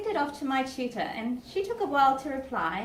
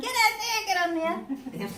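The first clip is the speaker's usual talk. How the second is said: mock shouting, high pitched and urgent; 7 semitones higher than usual. A parent recalls shouting to their son during his game, retelling a yell. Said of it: "I'm yelling".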